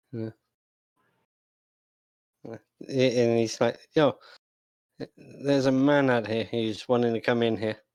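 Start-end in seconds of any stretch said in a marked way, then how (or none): none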